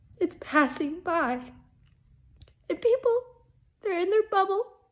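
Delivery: high, tearful speech through crying. Speaking to viewers about faith and the world passing by, crying. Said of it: "So I'm crying".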